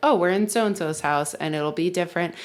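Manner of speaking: ordinary delivery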